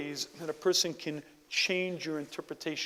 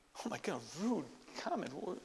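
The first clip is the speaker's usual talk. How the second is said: ordinary delivery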